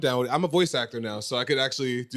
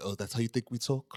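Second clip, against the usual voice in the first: soft, put-on British accent; 7 dB quieter than usual. Mimicking how British people react to their accent being copied, in a British accent. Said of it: "British people hate it when you try to make their accent".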